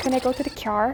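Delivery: put-on Northern Irish speech. Speaker guessing a place shows how Northern Irish people talk, Northern Irish accent. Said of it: "in Northern Ireland, they say like".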